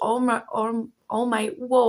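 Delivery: stuttering, stammering, tripping over words. Speaking to viewers about a card, stuttering. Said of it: "I'm stuttering right now".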